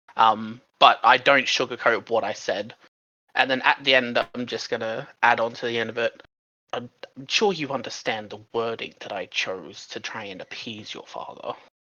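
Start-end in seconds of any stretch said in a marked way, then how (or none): 7.2-11.6 whispering. Adding a final remark to him at the end, whispering. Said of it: "I'm just going to whisper to him".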